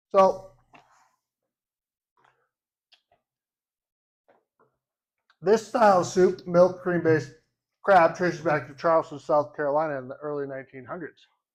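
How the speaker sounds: speaking with mouth full of food. Telling viewers the history of a crab soup, talking with mouth full. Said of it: "got bread in my mouth. I'm sorry".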